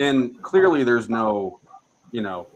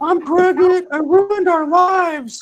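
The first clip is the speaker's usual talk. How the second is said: put-on very high, loud wailing, bawling sobs; 7 dB louder than usual. Retelling his ex-wife's phone call to him at work, imitating someone bawling. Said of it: "like bawling on the phone".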